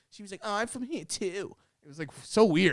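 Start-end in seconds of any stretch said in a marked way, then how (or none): 0.4-1.5 put-on high, babyish little baby-talk voice. Retelling what a woman at the bar said: imitating a baby voice. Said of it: "she spoke like a baby".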